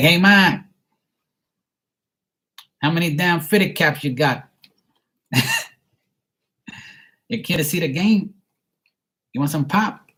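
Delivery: put-on Boston accent. Describing how Boston people talk, imitating a Boston accent. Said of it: "that's how they talk".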